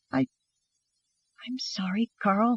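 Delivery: trembling, wavering voice, high-pitched and slow. Reading a story aloud, a frightened boy apologizing: quavering voice. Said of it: "James quavered".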